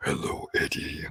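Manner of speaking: breathy, whispered, lurking monster voice. Asked what impression he means, he performs it on the spot: Venom impression. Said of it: "pretty good Venom impression".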